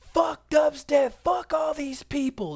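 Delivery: high-pitched, shrill, furious, raging scream. Telling a story about a woman in a screaming rage, retelling a raging scream. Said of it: "She's screaming at the top of her lungs".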